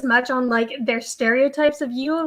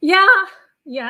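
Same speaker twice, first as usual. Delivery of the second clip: voice cracks, jumping suddenly high and loud; 7 semitones higher, 6 dB louder than usual. Agreeing after listing contestants, voice cracking. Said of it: "my voice just cracked".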